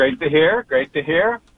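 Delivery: lightly sarcastic tone. Calling in and remarking that Boston's baseball team gets talked about: sarcastic tone. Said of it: "a little sarcasm, sarcasm there".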